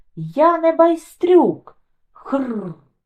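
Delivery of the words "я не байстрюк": sudden, abrupt, high, loud shout. A boy taunted by the others suddenly lifts his head: shouted. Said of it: "раптом підняв голову і крикнув".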